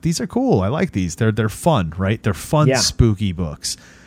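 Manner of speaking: ordinary talk, nothing marked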